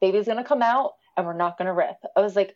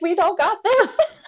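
very high-pitched, tearful, crying panic; 10 semitones higher, 3 dB louder than usual. Retelling what you said before the doctor told you to relax, retelling crying panic. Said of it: "And I'm like crying".

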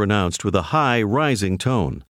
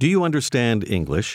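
normal talking voice

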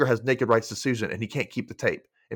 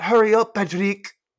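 very high put-on French accent, calling out; 9 semitones higher, 5 dB louder than usual. Retelling a scene where a woman in another room calls out: imitating a french woman calling out. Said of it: "a French woman in the other room call out".

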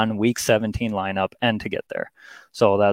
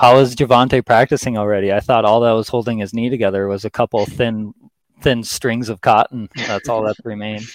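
ordinary delivery

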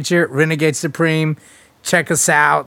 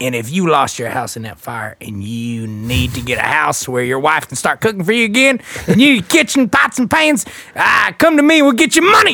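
mock Southern US lawyer commercial voice. Acting out a Southern lawyer's fire ad: mock Southern lawyer ad. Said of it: "It was something like that".

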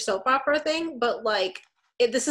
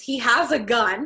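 usual speaking voice

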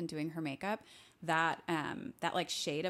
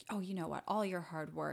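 mock manipulative, guilt-tripping tone. Retelling how a husband in the show guilt-trips his wife: imitating a manipulative guilt-trip. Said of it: "he did that little manipulative thing where he was like".

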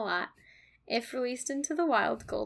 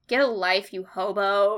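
put-on sassy goldfish voice, louder; 2 semitones lower, 9 dB louder than usual. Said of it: "super sassy".

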